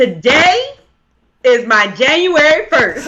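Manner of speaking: projected from the belly. Showing Tisha how to say the line again, projected from the stomach. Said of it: "All the way down from the stomach".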